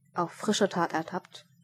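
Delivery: plain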